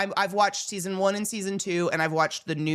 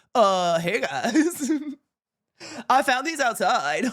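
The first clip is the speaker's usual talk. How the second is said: goofy, awkward bird voice, high and slow; 5 semitones higher than usual. Imagining a really awkward stork delivering two kids: awkward stork voice. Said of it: "That's my stork voice".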